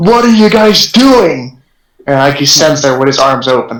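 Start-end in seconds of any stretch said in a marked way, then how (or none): 0.0-1.6 mock startled, shocked, high-pitched scream, called out far. Player voicing a character as rats chase them, screaming in shock. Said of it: "he's like screaming towards them".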